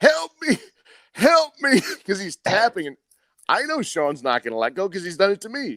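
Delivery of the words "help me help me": very high, shrill, drawn-out screaming. Retelling a training partner caught in a choke, imitating someone screaming. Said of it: "he starts screaming".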